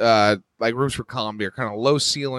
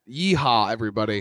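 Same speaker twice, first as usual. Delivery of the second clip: normal talking voice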